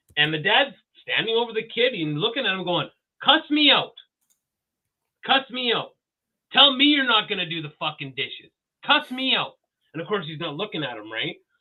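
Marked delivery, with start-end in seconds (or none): 3.2-9.6 put-on voice, raised and pitched up, short of yelling. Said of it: "his ra-, voice was raised".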